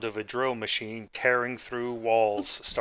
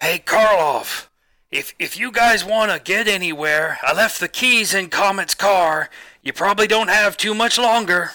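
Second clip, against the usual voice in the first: put-on very high, shrill, loud, booming crazy old prospector voice; 9 semitones higher, 12 dB louder than usual. In an actual-play game, voicing a crazy old miner driving a mole machine. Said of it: "I honestly did not think that playing a crazy old miner driving a mole machine would actually be one of the most / [name] takes out his bag of explosives, / I honestly did not think that playing a cra".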